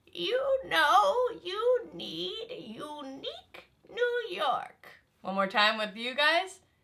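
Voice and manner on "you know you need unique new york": put-on slow, high voice of a very old person. Leading a group drill, repeating the phrase, pretending to be 100 years old. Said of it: "pretend we are 100 years old".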